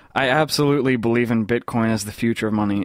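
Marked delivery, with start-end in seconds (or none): none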